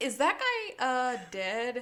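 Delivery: mock totally unfazed, slow, super unbothered, casual. Retelling a scene where a guy asks about a body: imitating someone super unbothered. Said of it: "super unbothered".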